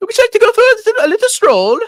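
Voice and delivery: put-on shrill, very high-pitched, loud English accent. Quoting a Spanish woman's invitation to walk, imitating her English accent. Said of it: "developed an English accent".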